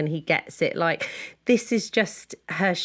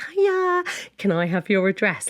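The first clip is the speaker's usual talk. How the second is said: mock bashful and eager, coy and excited; 2 semitones higher than usual. Retelling a mum asking a friend for her address: imitating someone coy and excited. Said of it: "kind of coy and excited".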